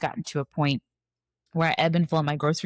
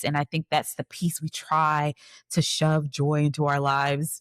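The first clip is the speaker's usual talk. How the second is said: usual speaking voice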